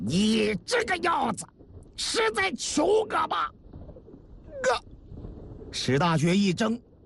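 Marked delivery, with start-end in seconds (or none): 0.0-3.5 roaring, bellowing, much higher and slower. Reading a story, the young master answers the man begging him; roaring. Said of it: "孙文举冲史大学也吼道".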